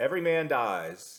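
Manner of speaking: put-on, failed Scottish accent attempt. Closing out today with a quote from Braveheart, bad William Wallace Scottish accent. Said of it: "I can't I can't do a Scottish accent".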